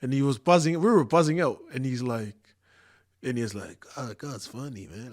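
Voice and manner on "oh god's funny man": put-on soft, slow American accent. Retelling what a man said on remembering him as a kid, american accent. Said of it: "the American accent".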